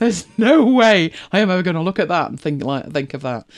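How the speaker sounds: usual speaking voice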